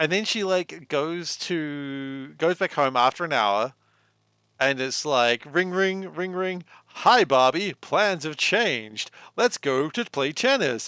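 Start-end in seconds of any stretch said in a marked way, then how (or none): 6.9-10.9 put-on digitized, computer-like video game voice. Describing a Barbie game, the speaker imitates Ken's phone call in a badly digitized voice. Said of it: "really badly digitized voice being like".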